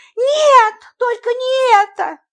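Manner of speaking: very high, slow, drawn-out emotional outcry. The American woman answers the narrator, exclaiming emotionally. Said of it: "эмоционально воскликнула американка".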